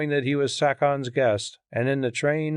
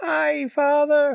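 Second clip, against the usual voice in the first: piercing, very high, shrill, harsh cry; 13 semitones higher, 3 dB louder than usual. A priestess holding a drugged, sleeping child cries out to the father, shrill hard voice. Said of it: "she cried in a shrill, hard voice".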